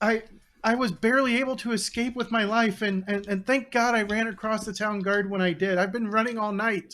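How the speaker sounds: panicked babbling. A survivor of an attack reports to the group after fleeing, frantic babbling. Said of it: "he's frantically babbling about something".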